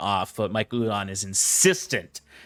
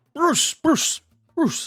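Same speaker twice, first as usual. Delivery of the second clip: very high voice, talking past a mouthful; 3 dB louder than usual. Describing approaching him, the speaker acts out his greeting to Bruce: imitating talking through a mouthful. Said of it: "as he has a mouth full of spring roll".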